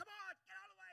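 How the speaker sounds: impatient, angry, high-pitched complaining outburst. Recounting being stuck behind a slow walker while driving: retelling angry words. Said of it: "I'm angry".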